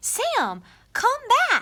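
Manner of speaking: very high, lively, excited storybook read-aloud style. Reading a story title aloud that ends in an exclamation mark: read with excitement. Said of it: "I'm gonna read it with excitement".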